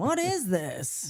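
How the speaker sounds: put-on drunken speech. Retelling how a drunk dad opened a gift: imitating drunk dad. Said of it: "he's not even paying attention 'cause he's drunk".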